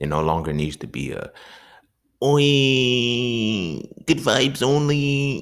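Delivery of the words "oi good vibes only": very high, very slow, silly mocking sneer. Speaker imitating the good-vibes-only people who annoy them, in a put-on mocking voice. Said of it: "I don't know why I did that voice".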